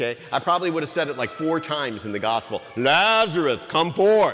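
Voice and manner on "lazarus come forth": dramatic, grand, commanding, pulpit-style proclamation. Showing how he always wanted to say the line: James Earl Jones voice. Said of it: "that James Earl Jones vi-, voice".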